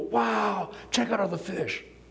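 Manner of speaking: high, mock amazed gasp.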